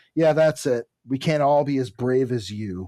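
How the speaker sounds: ordinary talk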